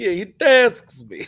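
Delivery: booming Russian accent pitched way up. Laughing about a commander, the speaker voices him in a Russian accent. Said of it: "all I could hear in my head is a Russian accent going".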